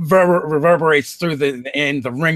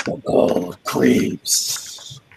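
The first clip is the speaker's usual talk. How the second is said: raspy voice, much lower and slower; 8 semitones lower than usual. A storyteller voices the armored figure behind the visor, in a raspy voice. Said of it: "you hear you know the a raspy voice".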